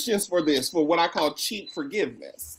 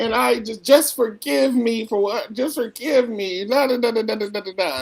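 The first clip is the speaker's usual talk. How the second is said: put-on, tearful, sobbing, weepy crying voice; 3 semitones higher than usual. Retelling how a colleague wept in a training: imitating someone weeping. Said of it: "She starts weeping and she starts crying".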